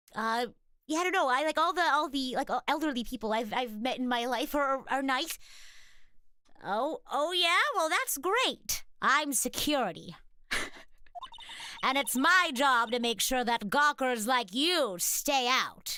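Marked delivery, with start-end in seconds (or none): 6.7-16.0 put-on mean old lady villain voice. Playing a security guard in a scene, in a granny villain voice. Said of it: "gra- Granny villain voice".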